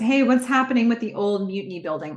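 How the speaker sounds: normal talking voice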